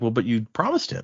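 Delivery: ordinary talk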